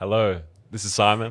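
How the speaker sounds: deliberately deepened voice. Greeting listeners again after being asked to go again: deliberately deepened voice. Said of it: "he is deepening his voice".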